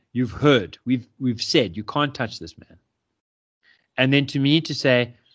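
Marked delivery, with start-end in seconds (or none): none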